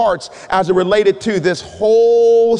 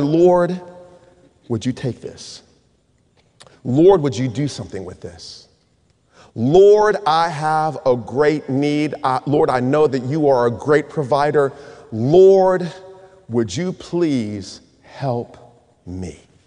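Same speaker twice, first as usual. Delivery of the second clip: put-on, slow, imploring plea, "Lord" drawn out; 7 semitones lower than usual. Retelling a desperate prayer for help with college: retelling a pleading prayer. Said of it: "I just cried out to the Lord".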